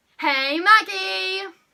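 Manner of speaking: over-the-top dramatic, very loud, high, enthusiastic. Showing how to greet the viewer maggie: enthusiastic, dramatic greeting. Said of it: "Like so".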